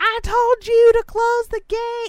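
shrill, booming, high-pitched, loud yelling. Telling a story, imitating a woman overheard yelling at her kids. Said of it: "this woman yelling at her kids".

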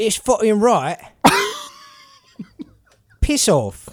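drawn-out, sing-song, very high, swooping put-on voice. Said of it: "can you do a [name] impression?".

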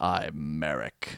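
very deep, very soft, low, quiet, sinister hushed voice. Retelling how Odion introduces himself up close: low voice imitating Odion. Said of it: "He gets in real close and real down low".

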